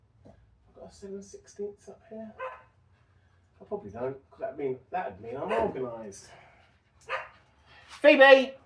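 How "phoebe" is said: high-pitched loud shouting. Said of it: "I shouldn't really be shouting at the dogs".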